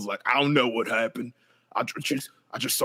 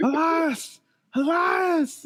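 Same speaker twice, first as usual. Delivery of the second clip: mock-drunk slurring, much higher. Retelling how a stumbling man called someone's name, imitating drunk slurring. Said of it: "why is he slurring his words then?".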